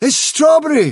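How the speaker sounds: high, loud outcry. One of a group spots a companion approaching and cries out. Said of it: "cried Dandelion".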